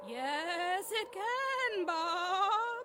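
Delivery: eerie, spooky put-on voice, words drawn out. A visitor answers Bob, just woken from a dream, in a scary voice. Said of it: "knock it off with that scary voice thing".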